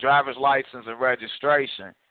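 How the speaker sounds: usual speaking voice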